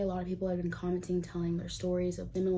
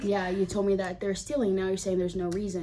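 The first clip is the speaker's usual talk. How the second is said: ordinary talk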